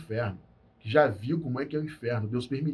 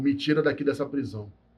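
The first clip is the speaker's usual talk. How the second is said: plain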